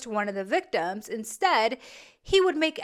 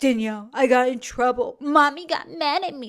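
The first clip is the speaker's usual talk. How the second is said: mock baby talk, childish put-on voice. Imagining her father calling her to say he got in trouble; mocking baby talk. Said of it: "Why are you talking like that?".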